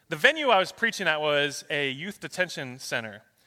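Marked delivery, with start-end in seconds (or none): none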